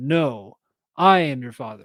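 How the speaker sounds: ordinary talk, nothing marked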